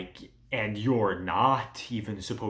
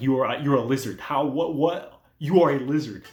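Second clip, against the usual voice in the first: put-on, loud, disbelieving, combative incredulous yelling; 4 semitones higher, 6 dB louder than usual. Recounting a story, acting out a character fighting a lizard man: retelling a shout. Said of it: "And shouting".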